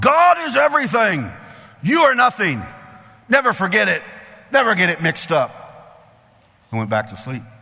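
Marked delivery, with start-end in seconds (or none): 0.0-5.5 put-on, high, full-throated, top-of-the-lungs bellowed proclamation. Retelling what a man in the car hollered, retelling a holler at full lungs. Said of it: "he hollered at the top of his lungs".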